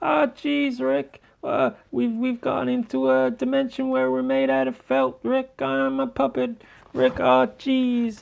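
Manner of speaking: put-on very high, jittery, nervous stammering teen voice. Doing Rick and Morty impressions, the speaker switches to Morty: Morty impression. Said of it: "my famous Rick and Morty impersonations".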